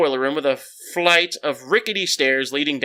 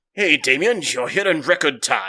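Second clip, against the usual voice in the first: put-on super British accent, laid on thick. Voicing Hugo as he greets Damien at the school, in Hugo's super British accent. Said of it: "I gave him like a super British accent".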